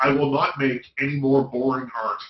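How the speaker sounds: ordinary talk, nothing marked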